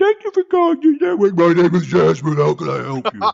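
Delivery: forced feminine falsetto that slips and drops. Recalling how Jasmine answered every call at work: imitating Jasmine's phone voice. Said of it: "start off with like a female voice, but fail to hold it".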